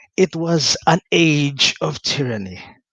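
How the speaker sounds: put-on thoughtful, wise, contemplative old woman's narrating voice. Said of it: "an old woman's voice, contemplative and wise".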